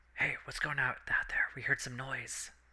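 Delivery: quiet hushed whispering. Voicing a person inside the tavern calling out to the party: whispering. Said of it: "You hear a whisper".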